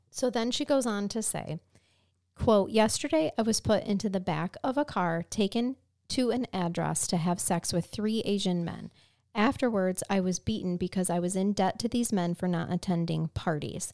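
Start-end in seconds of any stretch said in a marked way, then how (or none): none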